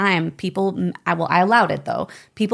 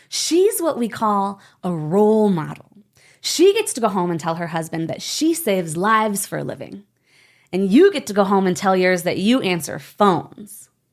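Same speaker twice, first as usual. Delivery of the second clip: usual speaking voice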